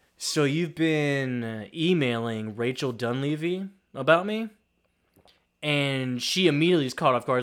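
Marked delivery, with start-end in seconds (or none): none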